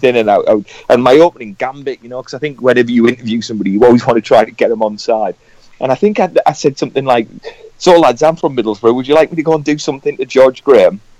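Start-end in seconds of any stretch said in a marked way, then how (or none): none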